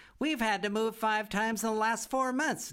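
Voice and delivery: very high-pitched, giggling delivery. Biddy L. speaks in Mr. Clipwell's office, giggling. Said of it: "giggled Biddy L".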